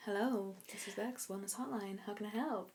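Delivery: very soft, hushed, sultry voice. Answering a pretend wellness hotline call, sultry voice. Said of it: "I went really sultry".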